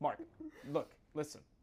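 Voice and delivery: play-acted exasperated, annoyed, insistent tone. Retelling a girl teaching braiding, imitating an annoyed teacher. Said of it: "getting so annoyed. She's like".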